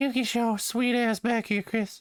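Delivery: high voice up in the head register. After saying he can't do the whistle, he does a Herbert voice. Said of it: "That's a high register voice".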